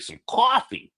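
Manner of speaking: bad, exaggerated, very high-pitched New Jersey accent. Speaker repeats a phrase in a bad Jersey accent. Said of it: "that was an even worse Jersey accent".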